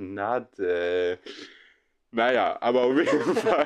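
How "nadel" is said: word stretched long in playful, jokingly annoyed exasperation. Showing how the name gets said when jokingly annoyed: drawn-out 'nadel'. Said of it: "dann ziehe ich das ja auch immer richtig in der Länge, so".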